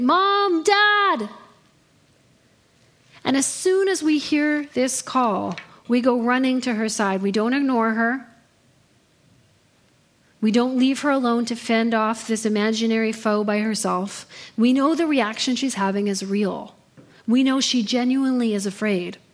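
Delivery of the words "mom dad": crying out high. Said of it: "she will cry out in the night".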